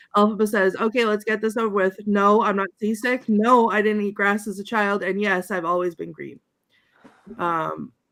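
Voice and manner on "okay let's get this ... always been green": ordinary talk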